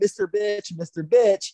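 mock, high-pitched screaming call-out, repeated over and over. Retelling a moment of chasing someone for attention, imitating own past screaming. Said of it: "I just start screaming".

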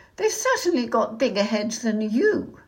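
sharply said comeback. Narrator reads the princess's retort to her mate, said sharply. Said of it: "the princess said sharply".

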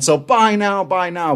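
high-pitched, hyped infomercial pitchman hard sell. Joking that an ad read sounds like TV selling: imitating a TV pitchman. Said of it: "I sound like the guy on the T V going".

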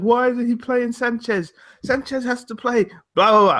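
put-on English accent. Discussing Wenger not playing Sanchez, the speaker quotes people: put-on English accent. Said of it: "What English accent was that?".

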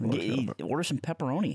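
put-on Canadian trailer-park accent. Friends imagine how a Tim Hortons worker would talk, talking like Ricky from the trailer park. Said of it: "he'd be talking like fucking Ricky from the trailer park".

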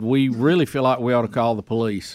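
ordinary delivery

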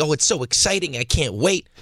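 imitated excited gushing. Imitating the other speaker's excitement from yesterday: mock showgirl gushing. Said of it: "Why do I turn into, like, a showgirl?".

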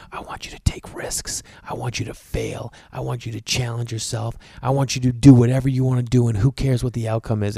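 voiced stage whisper, soft and close to the ear. Retelling the words said to a son carried to bed: imitating own whisper. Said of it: "I'll whisper in his ear".

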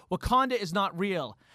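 ordinary talk

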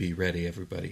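quiet, hushed stage whisper. Voicing Victoria warning the crew as a vessel appears: half-whispering. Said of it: "and she whispers".

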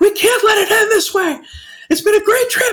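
mock panicked, very high-pitched freaked-out voice. Retelling their own freak-out on a trip, acting out past panic. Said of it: "just freaking out".

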